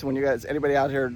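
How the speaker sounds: rushed, quick delivery.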